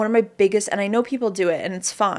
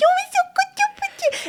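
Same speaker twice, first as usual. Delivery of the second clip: put-on very high baby talk. Imitating baby talk to children: mock baby talk. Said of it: "the baby talk".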